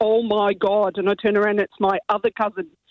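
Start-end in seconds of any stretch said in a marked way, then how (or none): 0.0-1.0 put-on broad Derry accent, laid on thick. Retelling what a cousin from Northern Ireland said: thick Derry accent. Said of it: "in a really thick Derry accent".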